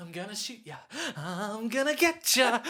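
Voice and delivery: hamming it up, theatrical, overacted villain menace. Recapping a film's standoff scene, acting out a gunman: imitating hammy overacting. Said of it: "And he's hamming it up".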